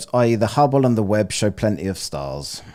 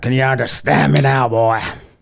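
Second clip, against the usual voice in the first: pirate-sounding voice, loud; 4 semitones higher, 5 dB louder than usual. Trying out an accent on the other speakers, pirate-sounding voice. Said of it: "You just sound like a pirate now".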